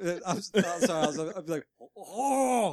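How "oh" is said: high-pitched alien character voice. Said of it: "You sound like ... the Edgar suit".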